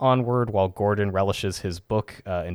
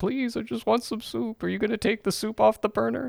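put-on very high, creaky old man voice; 13 semitones higher than usual. Retelling what a senile character says about wanting soup: imitating a senile old man. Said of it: "senile the first half of the episode".

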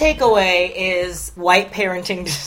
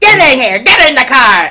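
loud, high, barked evil villain voice; 5 semitones higher, 11 dB louder than usual. Quoting Benny the cab driver in his evil scene: imitating evil Benny. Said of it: "when he's, like, evil".

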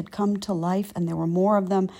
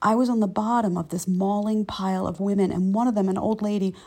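ordinary delivery

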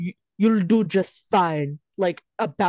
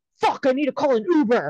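abrupt, high, sudden blurted-out holler; 6 semitones higher than usual. Retelling a movie character's line after snorting cocaine: imitating someone yelling. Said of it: "and then he just yells".

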